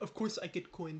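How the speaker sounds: soft, caveman-like voice. Gaming commentator reacting to getting a coin, sounding like a caveman. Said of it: "Why do I sound like a caveman?".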